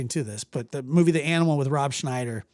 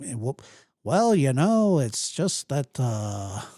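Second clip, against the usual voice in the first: slow, drawn-out, dawdling talk with fillers. Imitating Gray, who draws his words out: imitating Gray drawing words out. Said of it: "he kinda draws his stuff out".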